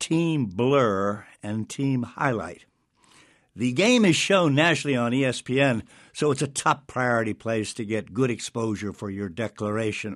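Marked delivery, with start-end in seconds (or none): 0.0-2.6 very slow, deliberate, stretched out. Speaker names the two sides of an invitation game, said slowly. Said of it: "now let me say this slowly now".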